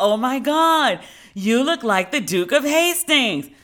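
high, loud, slow gushing. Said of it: "people being like".

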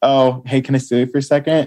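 sweet, friendly, gently put tone. Acting out approaching someone to pull them aside: sweet. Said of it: "more, like, sweet".

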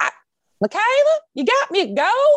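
put-on heavy Southern old woman accent, very high pitch. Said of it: "She has a very thick Southern accent".

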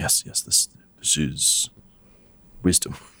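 quiet muttered voice. A narrator voices Thaddeus agreeing with what another character said, Thaddeus muttering. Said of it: "and mutters like mm".

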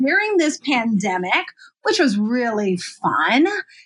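swooping, sarcastic sing-song meaning the opposite. A photographer introducing herself to viewers, speaking sarcastically. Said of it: "I hope you guys can hear the sarcasm in that".

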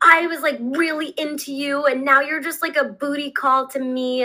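heated, angry ranting, screaming. Retelling how a man came over and screamed at the speaker, retelling someone screaming. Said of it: "screaming at me, being like".

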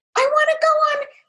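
tiny, squeaky, very high put-on voice. Showing a parent how to make a shoe dance and talk to a child: squeaky voice. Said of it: "you might make a squeaky voice".

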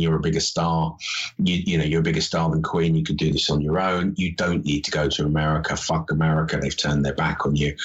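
ordinary talk

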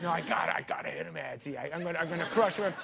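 put-on heated, worked-up angry voice, repetitive. Retelling how Chris Farley threatened David when angry: imitating Chris Farley angry. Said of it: "he'd get so angry".

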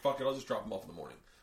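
normal talking voice

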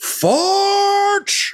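shouting. A game master voices a big guy smashing through a window with a warhammer, yelling. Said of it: "he actually yells".

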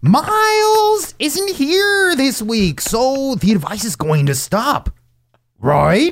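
very high, swooping cartoon hound voice. With Miles away this week, the speaker does his voice: imitating Miles. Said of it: "That was like Scooby-Doo".

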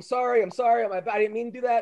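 mock weepy, tearful, pleading, crying voice. Retelling how the fighter apologized after the kick: imitating Van Damme crying. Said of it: "Van Damme starts crying".

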